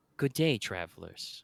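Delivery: deep, rich, soft, full-bodied female voice. Game master voices a twelve-foot giant greeting the travelers, deep, rich female voice. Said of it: "a deep, rich uh, female voice".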